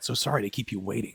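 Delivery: put-on gravelly soldier voice. Repeating the line from a spoof video: Solid Snake voice. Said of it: "a spoof video of Solid Snake".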